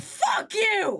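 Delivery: very high-pitched, loud yelping outburst. Retelling shouting at a man across the stage; retelling a loudest shout. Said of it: "in the loudest voice I could".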